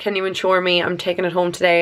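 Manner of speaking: plain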